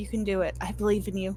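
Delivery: gentle, soft, tender hushed whisper. In character, the speaker gently whispers to his little guy. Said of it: "gently whisper to my little guy".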